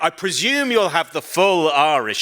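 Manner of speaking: mock grand, very proud, lofty hostess manner. Retelling what the bed and breakfast owner said: imitating a very proud tone. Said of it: "she came down in that very proud way".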